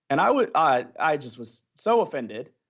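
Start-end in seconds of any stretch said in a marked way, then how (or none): none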